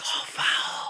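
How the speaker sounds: soft, conspiratorial whisper. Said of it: "whisper in a referee's ear".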